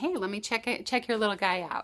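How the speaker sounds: usual speaking voice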